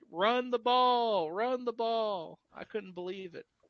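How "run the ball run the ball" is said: pleading, high, very slow, drawn-out scream. Retelling watching the team pass instead of run, imitating own screaming. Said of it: "I was sitting there screaming".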